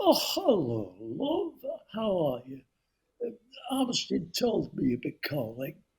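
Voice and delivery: swooping, sing-song voice. Retelling a phone call to the man he was told to ring: impression of David. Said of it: "that's a great impersonation".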